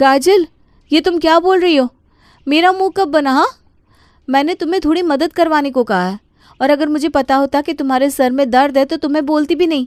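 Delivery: quarreling tone. In a family drama, the sister-in-law retorts to an accusation: arguing. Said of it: "अब लड़ो मत।".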